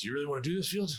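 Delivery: heavy put-on British accent. Recalling a university mentor's question to him, in Martin Saint John Sutton's British accent. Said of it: "in his uh, thick British accent".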